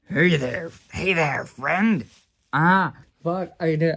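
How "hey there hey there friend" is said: loud attempt at a werewolf voice. Voicing a character who greets the others: attempted Wolfman voice. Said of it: "I can't do Wolfman".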